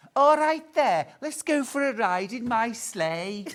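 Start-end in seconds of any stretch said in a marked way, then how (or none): 1.2-3.5 put-on Liverpool Scouse accent. Retrying a line after the other speaker prefers the liverpool version; liverpool accent. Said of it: "That's the one".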